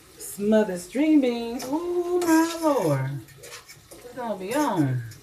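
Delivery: high, slow, stretched-out ecstatic rave.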